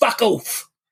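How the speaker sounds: put-on English accent, pitched very high. Speaker imagining customers answering the police: English accent. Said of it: "in that English accent that I just did".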